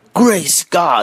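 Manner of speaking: high, breathless, startled gasping exclamation. Narrator reading the story, as the Duke reels back: gasping. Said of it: "he gasped".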